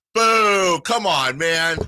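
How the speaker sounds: teasing, very high, slow, drawn-out playful boo. Retelling teasing a Lakers fan walking by: retelling playful heckling. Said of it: "I'm having fun with him".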